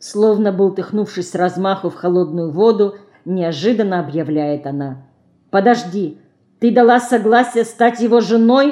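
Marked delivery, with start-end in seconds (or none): 5.5-8.7 pressing, insistent, demanding tone. A sister presses her sister after a sudden announcement, quick and demanding. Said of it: "Быстро и требовательно спрашивает сестра".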